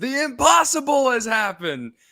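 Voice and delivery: high, loud, excited shouting.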